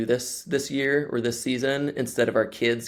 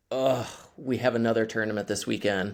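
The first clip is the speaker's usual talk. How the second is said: exasperated, fed-up, put-upon grumbling complaint. Imitating friends from the speaker's crew, in an exasperated tone. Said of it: "it's this like exasperated".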